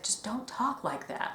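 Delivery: near-whispered, gentle, very soft and breathy. Retelling a Voltron scene where Keith answers an injured Shiro, in Keith's very soft voice. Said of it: "Keith says in that very soft voice".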